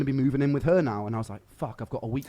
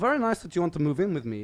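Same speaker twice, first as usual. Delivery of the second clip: fake, vague European accent, pitched up; 5 semitones higher than usual. Speaker retells what a man said to him, in a bad vague European accent. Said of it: "Just some some vague European accent".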